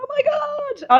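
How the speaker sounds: very high acted squeal, stretching out god. Retelling opening a pregnancy announcement gift, imitating own screaming. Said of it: "I start screaming, going".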